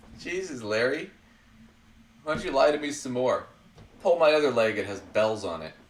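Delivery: ordinary talk, nothing marked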